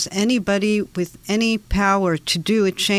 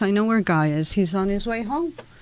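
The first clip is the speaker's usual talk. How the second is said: ordinary talk, nothing marked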